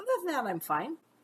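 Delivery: high-pitched, light, breezy, dismissive delivery. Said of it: "but I'm like".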